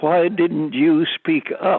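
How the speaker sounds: put-on heckler's shout. Retelling how someone in the silent audience called out: imitating someone shouting.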